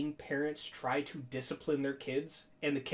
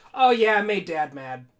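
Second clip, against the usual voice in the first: acted very loud, breezy, matter-of-fact nonchalance; 4 semitones higher, 13 dB louder than usual. Retelling what a girl on the team said about a bruise: imitating a nonchalant reply. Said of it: "she just so nonchalantly".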